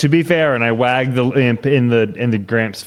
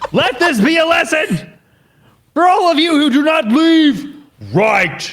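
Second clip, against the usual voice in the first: high-pitched, intimidating, menacing tone. Holding up a dead imp to warn the others: intimidating threat. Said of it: "Roll an intimidation check".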